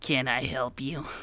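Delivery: soft, rat-like, almost rodent voice. A storyteller voices a cloaked, short figure sitting at a table, in a ratty voice. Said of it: "this almost ratty voice of".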